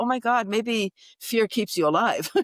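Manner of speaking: speaking through laughter. Speaker retells her reaction after being told to get down, retelling while laughing. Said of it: "And then I started laughing".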